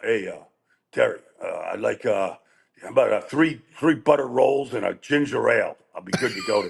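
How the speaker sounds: put-on gravelly voice. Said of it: "he's got this gravelly voice".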